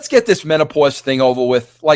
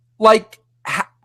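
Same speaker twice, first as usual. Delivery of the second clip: usual speaking voice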